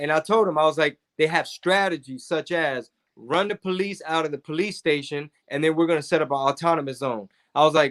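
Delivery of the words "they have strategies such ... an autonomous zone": normal talking voice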